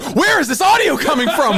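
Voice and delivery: put-on freaked-out, panicked voice. Retelling how the producer reacted to strange audio: imitating a freaked-out producer. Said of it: "you just freaked the fuck out of the producer".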